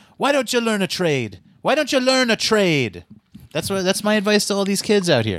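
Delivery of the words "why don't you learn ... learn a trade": put-on scolding, yelling voice in a Jamaican accent. Retelling an old lady yelling at a dancing man in Manhattan, imitating a Jamaican lady yelling. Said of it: "old Jamaican lady yelling at him".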